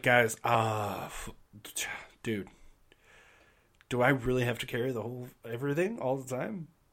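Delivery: teasing sarcasm delivered with a smile. Voicing a band member in a game, complaining to the others: sarcastic, said with a smile. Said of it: "he says that with a smile 'cause you know he's being just a sarcastic asshole".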